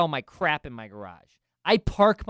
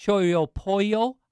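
best attempt at a put-on Mexican accent; 3 semitones higher than usual. Wanting to order at El Charro, dish name in put-on Mexican accent. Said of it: "I try to say that with my best Mexican accent".

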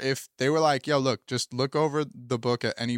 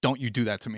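imitated angry outburst. Retelling how a teacher reacted in class: imitating an angry teacher. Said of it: "you just saw the anger right in his face".

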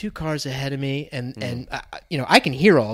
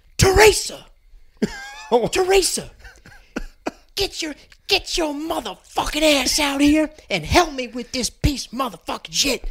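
mock woman's scream, much higher; 13 semitones higher than usual. Telling a story, the speaker acts out a woman screaming into a parking lot. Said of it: "she screams into".

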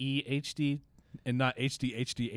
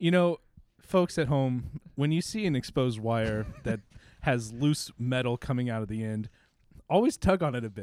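ordinary talk, nothing marked

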